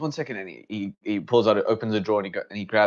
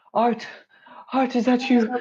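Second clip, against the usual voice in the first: choked-up, tearful crying voice, very high and slow; 3 dB louder than usual. Voicing a character who recognizes his brother, crying. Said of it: "And his tears start streaming".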